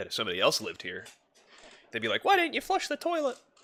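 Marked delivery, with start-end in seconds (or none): 2.2-3.4 very high falsetto, like a woman. Imagining a roommate asking why they didn't flush, in falsetto voice. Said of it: "I said that with a falsetto".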